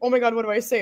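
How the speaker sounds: put-on panicked voice. Retelling being asked a question in an interview: imitating own panic. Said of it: "I was panicking".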